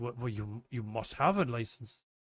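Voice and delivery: clumsy, put-on German accent, pitched low. Retelling what a german said when asked a question, in a bad german accent. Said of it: "my German accent is really bad".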